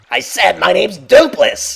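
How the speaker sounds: hoarse, high, rough, very loud yell. Voicing a character who wanted his name kept secret: character yelling his name. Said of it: "now he's just, like, yelling it".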